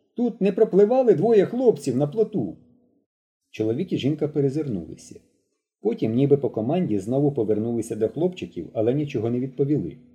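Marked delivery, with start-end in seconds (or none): 0.2-2.6 very high, loud hollering. From a boat, a boy calls out to a couple on the shore. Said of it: "гукнув Мишко".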